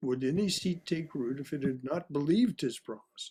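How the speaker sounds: BELIEVED leaned on, falling tune at the close.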